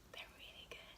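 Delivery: hushed, very soft whisper. Speaker adds an aside while explaining how to store food, whispering.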